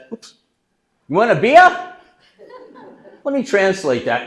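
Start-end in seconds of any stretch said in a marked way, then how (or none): 0.1-2.0 hearty, loud, high-pitched put-on New England accent. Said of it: "in that great New England accent".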